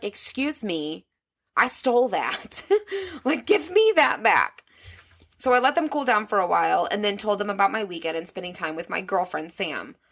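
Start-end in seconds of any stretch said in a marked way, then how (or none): 0.0-4.6 really upset voice, high and swooping. Retelling protesting after the stepmom yelled, acting out own upset protest. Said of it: "I was so fucking upset".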